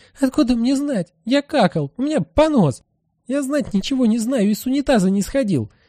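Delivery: very high, outraged, indignant hissing. Narrator reads a character answering after being shoved, hissing indignantly. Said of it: "Бабочка возмущенно шипит".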